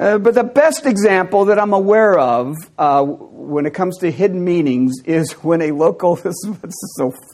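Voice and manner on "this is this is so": soft, laughing through the words. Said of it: "I can't really get through without laughing".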